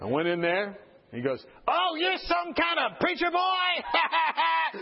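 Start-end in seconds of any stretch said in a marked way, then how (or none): 1.7-4.8 slow, high, mocking demonic jeer. Recalling what a patient said when he went in to see him; retelling a demonic, laughing taunt. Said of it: "Like a demon laugh".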